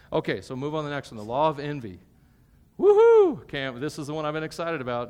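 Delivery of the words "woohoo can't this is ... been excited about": sarcastic, loud, swooping put-on enthusiasm and excitement. Introducing the next topic, the law of envy, with sarcastic fake excitement. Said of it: "That was sarcasm".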